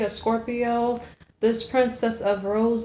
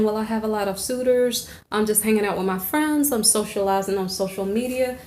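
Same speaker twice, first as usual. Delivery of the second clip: ordinary talk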